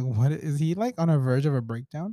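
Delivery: ordinary talk, nothing marked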